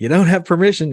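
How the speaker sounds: abrupt, loud, high, startling blurt. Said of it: "said it really loud and startled him".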